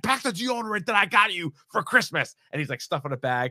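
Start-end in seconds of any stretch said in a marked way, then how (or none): 0.0-2.4 high, screamed voice. Retelling a movie scene where a brother packs a bag: imitating someone screaming. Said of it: "screaming at him".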